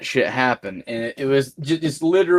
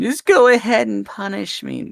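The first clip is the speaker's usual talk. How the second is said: put-on defiant, belligerent bratty child voice, higher and creaky; 7 semitones higher than usual. Mocking the other speaker's behaviour: imitating a belligerent child. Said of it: "acting like a belligerent child saying".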